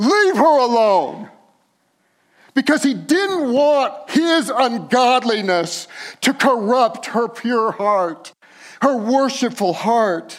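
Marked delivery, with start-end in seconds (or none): 0.0-1.3 big, loud, lion-like roaring voice. Asking listeners to picture a lion rebuking: Aslan roaring. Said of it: "can you picture just Aslan roaring".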